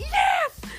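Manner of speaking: very high, screamed single word.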